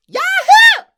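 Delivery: very high, very loud shriek, almost blowing the mic. Topping a friend's impression with a loud yell: Toad from Mario Kart 64 scream. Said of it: "That was Toad from Mario Kart sixty-four".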